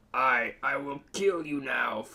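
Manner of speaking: slow, hellish, demon-like voice. Reading a story aloud, voicing Freddy's line to Mister Popo in Freddy's demonic voice. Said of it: "Freddy said in a demonic voice".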